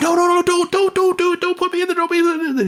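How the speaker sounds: acted-out panicked screams, very high, terrified. Describing a play where a character is shoved into a room, imitating terrified screaming. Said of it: "and he's screaming. He's like".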